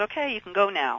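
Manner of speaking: ordinary delivery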